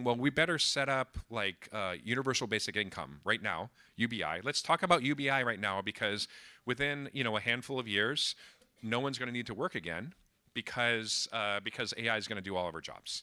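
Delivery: ordinary delivery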